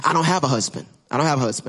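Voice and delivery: sarcastic, with put-on cuteness. Retelling a woman's answer when told to call her husband: imitating a sarcastic reply. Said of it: "she tries to get sarcastic".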